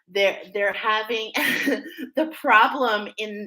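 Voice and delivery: slow speech with laughter through the words.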